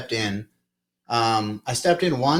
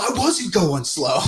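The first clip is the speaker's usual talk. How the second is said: mock, really mad, defensive retort; 5 semitones higher than usual. Retelling what a man said back during an argument, imitating an angry man. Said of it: "Like he was real mad about it".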